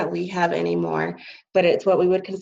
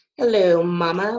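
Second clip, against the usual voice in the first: really big announcer voice. Relaying a greeting to Mama, like announcing stuff: [name]'s really big announcing voice. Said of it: "with his really big voice, like he's announcing stuff".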